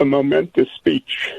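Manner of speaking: choked-up voice catching with emotion. Answering what they thought of the speech: getting choked up. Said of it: "I'm gonna get choked up".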